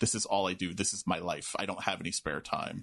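mock-deadpan delivery. A speaker retells Michael's line at the counter, imitating a deadpan delivery. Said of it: "and he deadpans".

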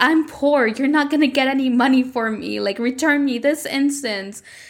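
mock yelling, scolding tone. Retelling a kidnapped character yelling at her kidnapper: imitating someone yelling. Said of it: "Millie yelling at the person who kidnapped her".

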